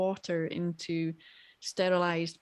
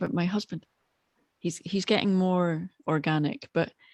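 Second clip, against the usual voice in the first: discreet, confiding, conversational aside tone. Speaking about a husband who is upstairs, speaking quietly. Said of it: "let me say this quietly 'cause my husband's upstairs".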